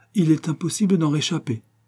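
murmuring. The count replies to Octave, murmuring. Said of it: "murmura le comte".

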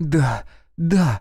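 frenzied whisper. A woman answers the man riding beside her, in a frenzied whisper. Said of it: "исступленно прошептала Катерина".

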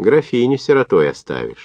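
biting, needling sarcasm in swooping sing-song. Parakhonko needles a comrade climbing up the trench, sarcastic. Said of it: "заметил Парахонько язвительно".

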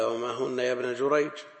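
normal talking voice

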